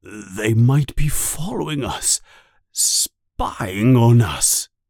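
frightened, fearful voice. Reading a story aloud, voicing the uncle's line, scared voice. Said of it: "Uncle Vernon says in a scared voice".

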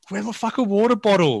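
mock-angry outburst. Recounting searching for his water bottle in front of two people: retelling his angry outburst. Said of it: "I'm so angry, aren't I?".

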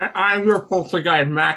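words muffled by a mouthful. Co-host introduces himself on a horror show, talking with mouth full. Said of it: "I have apples in my mouth right now".

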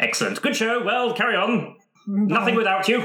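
put-on loud high old-man voice. Voicing a character in a roleplay, in a loud, strange old-man voice. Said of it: "like, how is this forgetful old... loud, strange man".

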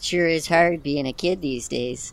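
put-on Chicago accent. Acting a kid line in a sketch take: Chicago accent. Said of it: "That was Chicago".

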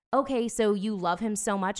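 usual speaking voice

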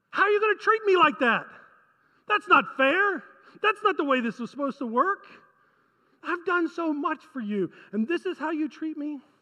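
exasperated, irritated, aggrieved reproach. The speaker voices God complaining of disrespect, God sounding mock-irritated. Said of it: "Can you hear the irritation in God's voice?".

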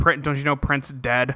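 mock deadpan delivery. Retelling a man's reply to Sam, imitating a deadpan reply. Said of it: "It just the most deadpan voice".

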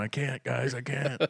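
put-on slow, frightened, pleading little-kid voice. Retelling hiding around the corner from scary movies as a child: imitating own scared younger self. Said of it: "I'd be hiding around the corner going".

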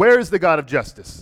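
loud, angry voice.

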